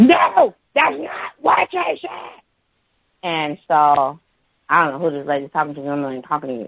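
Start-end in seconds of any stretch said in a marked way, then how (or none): 0.0-2.4 acted, very high, shrill, drawn-out scream. Retelling a coworker's interruption, imitating a woman screaming.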